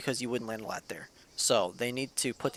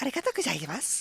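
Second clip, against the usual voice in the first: put-on girly voice, higher pitch; 13 semitones higher than usual. Retelling what the fiance's follow alert says: imitating a girly voice. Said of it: "in this girly voice".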